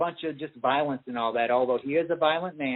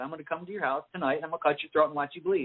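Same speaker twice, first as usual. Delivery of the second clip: put-on matter-of-fact, menacing voice. Retelling how Daniel Day-Lewis talked in character to a friend: imitating Daniel Day-Lewis in character, matter-of-fact. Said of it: "he literally talks like that".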